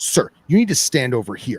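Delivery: firm, stern tone. Retelling how a woman told the speaker where to smoke: imitating a stern woman. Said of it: "and she's stern".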